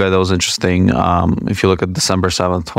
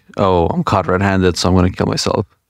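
normal talking voice

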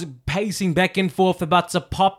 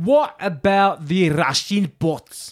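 put-on accent heard as Scottish. Asking about the Russian bots in a put-on accent heard as Scottish. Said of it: "that was Scottish, darling".

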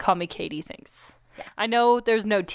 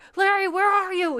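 mock screaming, pitched higher; 9 semitones higher than usual. Retelling how a guy on a TV show yells for distraction: imitating Joe screaming.

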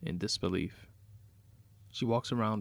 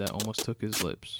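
plain

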